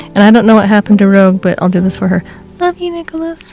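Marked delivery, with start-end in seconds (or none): 2.6-3.5 very high, squeaky put-on voice. Saying a sign-off on behalf of Rogue, who is absent: high squeaky voice for Rogue. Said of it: "I know she doesn't have a high squeaky voice, but I just needed to differentiate it from me".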